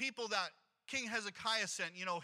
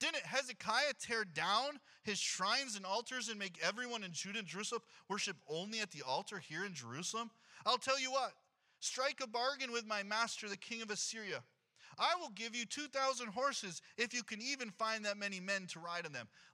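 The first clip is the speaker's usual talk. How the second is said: normal talking voice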